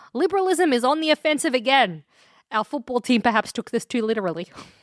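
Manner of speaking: normal talking voice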